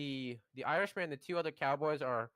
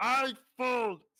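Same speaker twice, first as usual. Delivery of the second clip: very high, loud calling out; 10 semitones higher, 7 dB louder than usual. Telling how a card player shouts out his move, retelling a yell. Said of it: "he yells out loud".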